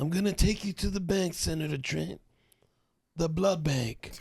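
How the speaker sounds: breathy, slightly high voice with lots of air. Reading the line again, the speaker does a breathy Seagal impression. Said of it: "He's got that breathy voice".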